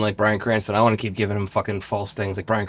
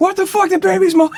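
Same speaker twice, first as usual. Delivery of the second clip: put-on furious outburst, pitched very high and loud; 5 dB louder than usual. Retelling feedback on an over-aggressive audition reading, quoting the delivery: mock-angry outburst. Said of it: "Why do you sound so angry?".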